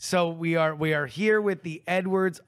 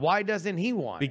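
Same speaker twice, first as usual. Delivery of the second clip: usual speaking voice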